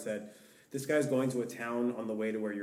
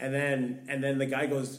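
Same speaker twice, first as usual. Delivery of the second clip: usual speaking voice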